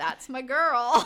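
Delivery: mock, dry, sarcastic delivery. Retelling a reaction shown on the show: imitating Dakota's sarcasm. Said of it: "sarcastically is like".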